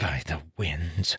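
hushed whisper. Narrator reads Lon's line to Tal as a realization sparks: whispered quietly. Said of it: "Lon whispered quietly".

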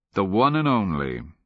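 ordinary delivery

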